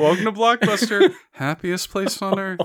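put-on sad voice. Repeating a Blockbuster worker's greeting from a story, imitating a sad dude. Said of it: "Just this sad dude".

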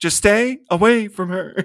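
halting, word-by-word delivery, full stop after each word. Imitating a movie character's line as William Shatner: William Shatner impression. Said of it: "Doing, like, William Shatner".

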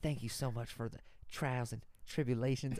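preachy Southern voice with praying cadence. Recalling early prayers, the speaker sounds like a Southern Baptist. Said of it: "I sound like a fucking Southern Baptist".

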